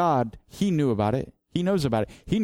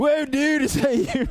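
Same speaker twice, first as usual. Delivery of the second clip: very high beach-bum surfer-dude voice; 11 semitones higher than usual. Retelling Peter seeing Jesus walk on water, give Peter's words: surfer voice. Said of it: "I don't know why I'm doing a surfer voice".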